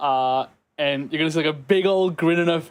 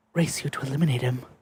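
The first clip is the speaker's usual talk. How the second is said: soft-spoken, hushed, expressionless, dead flat deadpan; 3 semitones lower, 4 dB quieter than usual. Describing how Half-whisper reacts to Eggman being near, in Half-whisper's soft deadpan voice. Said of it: "sort of in a deadpan with a soft voice".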